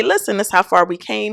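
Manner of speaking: normal talking voice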